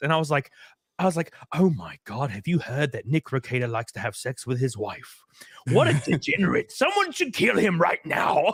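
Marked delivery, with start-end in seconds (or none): 1.5-8.5 mocking rant in a put-on English accent. Retelling his ten-minute rant, ranting in an English accent. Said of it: "like in an English accent".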